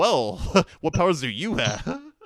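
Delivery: very loud, heroic but dopey voice. Quoting how he delivers a line: idiotic old-hero voice. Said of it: "sounding like an old heroic hero would sound, but also sounds like he's just an idiot".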